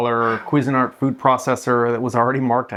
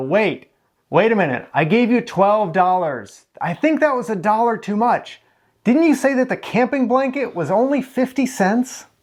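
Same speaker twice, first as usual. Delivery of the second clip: shrill, very high, screamed yell; 10 semitones higher than usual. Retelling a customer yelling from her car window, imitating a woman screaming. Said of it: "she screams out the window".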